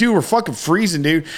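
put-on mild yell, half-yelled. Retelling a cold night, reenacting screaming at the others. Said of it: "I'm like just screaming us".

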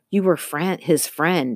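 ordinary delivery

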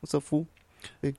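Mexican-accented speech.

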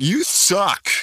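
put-on young child's voice. Recounting what a kid from Canada said, in a little kid's voice. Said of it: "a little kid's voice from Canada going".

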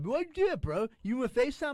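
very high-pitched, buddy-buddy chummy voice. Retelling Stutch asking why the FaceTime call was dropped: imitating Stutch. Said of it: "I'll hang up and I'll fucking call him back".

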